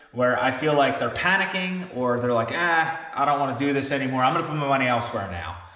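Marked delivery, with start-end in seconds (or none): none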